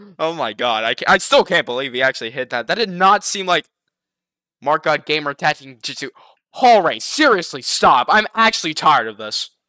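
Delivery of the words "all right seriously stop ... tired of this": exasperated, cross, fed-up angry outburst. Reacting to a hit in a gaming clip that seemed unfair: angry. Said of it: "I'm probably getting a little bit too angry here".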